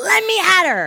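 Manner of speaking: very high, very slow, drawn-out excited shriek. Retelling an audience woman selected to join the speaker on stage, retelling an excited scream. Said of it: "she screams".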